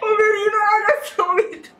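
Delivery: laughing hysterically, high loud cackling laughter.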